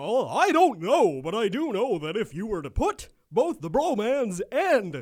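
loud, swooping, goofy cartoon voice. Replying in character to an imitated Vince, Goofy-sounding voice. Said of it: "I'm sounding fucking like Goofy here".

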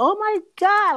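very high-pitched shriek, acted out. Recounting a phone call where both people screamed, retelling a scream. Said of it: "we both screamed".

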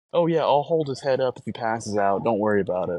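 plain

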